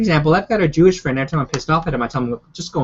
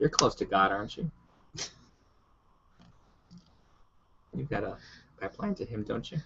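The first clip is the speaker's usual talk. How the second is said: very quiet, low, hushed, teasing, mocking tone; 5 semitones lower, 15 dB quieter than usual. Teasing a companion in conversation, with a mocking tone. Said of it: "I detect a mocking tone".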